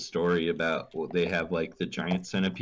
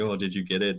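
put-on panicked freak-out voice. Retelling how she reacted to a house centipede, imitating someone freaking out. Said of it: "she would be like freaking out".

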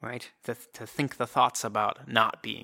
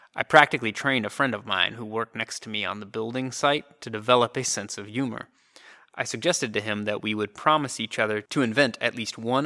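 ordinary delivery

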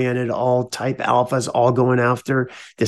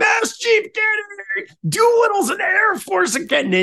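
put-on laughing shout, higher. Retelling how the commanding officer shouted while laughing: imitating someone howling with laughter. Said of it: "he just starts howling".

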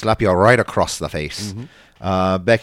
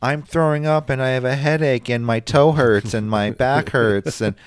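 put-on little kid voice, higher pitched; 5 semitones higher than usual. Acting out a sick kid telling stories to mom: imitating a little kid. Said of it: "stories like a little kid would".

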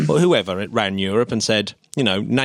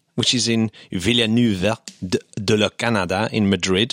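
French accent and pronunciation. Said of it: "I said that in a French accent".

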